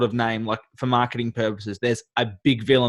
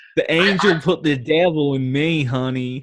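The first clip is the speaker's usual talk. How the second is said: slow, bad fake American accent; 3 semitones higher than usual. Joking after talk of bad american accents: mock bad american accent. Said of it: "Not when you're talking like that".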